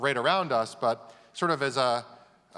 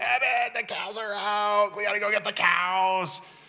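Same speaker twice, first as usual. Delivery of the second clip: mock urgent high yell with "cows" stretched out; 9 semitones higher than usual. Retelling being woken at three AM: imitating his dad screaming. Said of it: "my dad screaming".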